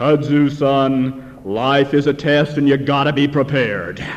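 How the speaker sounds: preacher's sermonizing voice, holding forth from the pulpit. Retelling a comic strip, the preacher answers a complaining boy in a preacher's pulpit voice. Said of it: "responds in his best pulpit voice".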